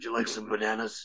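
put-on gravelly superhero voice. Voicing a shop clerk greeting players: Batman voice. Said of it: "talks like Batman".

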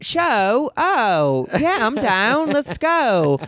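put-on clumsy Australian accent, high, slow, very drawn out. Retelling the date's answer to a show invitation: imitating Sam's Australian accent. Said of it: "I can't do accents".

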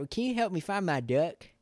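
put-on high, loud, folksy country kid voice. Retelling what a kid outside said to the speaker, in a country kid voice. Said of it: "In like the most country like kid voice".

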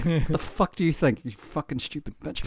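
hushed, whispered muttering under the breath. Imitating how other people would react: imitating muttering under breath. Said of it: "They would mutter under their breath".

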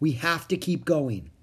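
ordinary delivery, nothing marked

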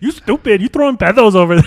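put-on Spanish-accented woman voice, very loud. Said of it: "That was the impression I came up with".

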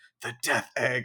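put-on whispered voice. Retelling a past moment of saying a name to oneself: imitating own past whisper. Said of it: "whispered to myself".

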